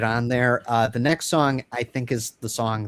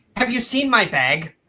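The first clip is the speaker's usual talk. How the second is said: very high, frantic, theatrical woman's voice; 11 semitones higher, 3 dB louder than usual. Acting out a play scene, a woman looking for her bag: frantic woman in a play. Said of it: "a woman enters frantically".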